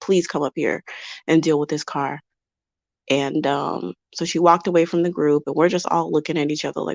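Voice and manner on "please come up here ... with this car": put-on pleading voice, quieter. Acting out how a stranded driver might plead over the phone: imitating someone pleading. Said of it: "I can only imagine her pleading with him".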